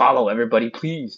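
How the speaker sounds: loud, sinister evil ghost-demon voice. Livestreamer reading a viewer's comment aloud, in an evil ghost demon voice. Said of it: "sound like an evil ghost demon".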